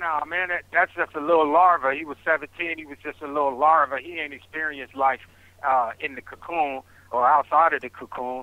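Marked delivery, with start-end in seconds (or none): none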